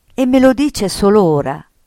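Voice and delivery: sudden, loud exclaiming outburst. In a read story, a mother reacts to news of a letter, exclaimed. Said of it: "esclamò la mamma".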